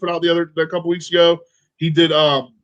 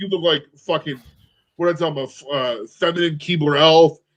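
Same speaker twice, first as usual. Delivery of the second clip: ordinary talk, nothing marked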